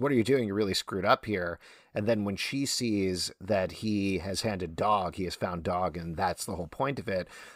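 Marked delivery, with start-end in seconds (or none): none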